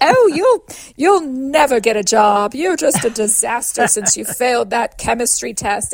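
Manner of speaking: deliberately silly, prim, lecturing schoolmarm put-on voice. Speaker demonstrates how clients can recast their negative self-talk: school marm voice. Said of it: "that classic sort of school marmy".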